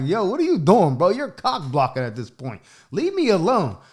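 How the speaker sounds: giggling, laughing, swooping delivery. Retelling what he said to his mom while giggling: retelling own giggling words. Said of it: "I'm kinda giggling like".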